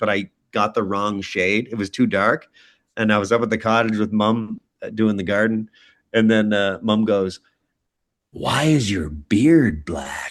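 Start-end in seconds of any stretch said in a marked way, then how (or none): 8.3-10.3 slow, drawn-out, possessed demonic voice. Speaker retelling what Mum said at the cottage, in a Regan-from-The-Exorcist voice. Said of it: "She talks like that? Like this?".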